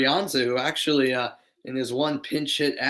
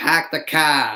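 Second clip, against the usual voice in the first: loud, gamely attempted put-on Boston accent; 5 dB louder than usual. Speaker from Boston without a true accent tries one: put-on Boston accent. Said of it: "Can I do a Boston accent? ... I'll try".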